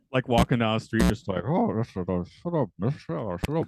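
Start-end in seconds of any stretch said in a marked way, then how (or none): 1.4-3.6 put-on Scottish accent, higher pitch. Retelling how a friend practices his Connery while walking down the street: imitating a friend's Connery impression. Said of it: "I've caught Luke practicing his Connery".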